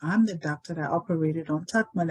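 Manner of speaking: ordinary delivery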